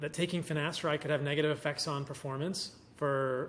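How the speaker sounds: ordinary delivery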